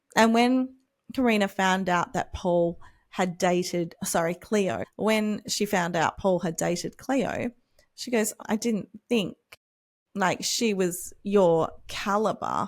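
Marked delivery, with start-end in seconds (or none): none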